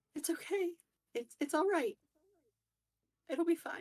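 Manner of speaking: trembling, quivering, very high-pitched voice. A woman answers condolences for her loss, in a quivering voice. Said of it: "in a in a quivering voice".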